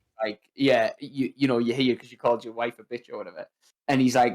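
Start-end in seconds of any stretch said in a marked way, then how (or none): none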